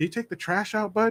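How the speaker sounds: gentle, mild, soft-spoken, slightly high voice. Retelling what Bill asked Bobby: imitating a soft-spoken man. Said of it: "he's real soft-spoken, too".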